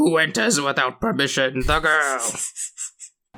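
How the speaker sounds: acted, half-yelled, slow, drawn-out mild yell. Retelling a movie scene, doing Doctor Kasumi Nome: imitating Doctor Kasumi Nome yelling. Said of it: "he just yells everything".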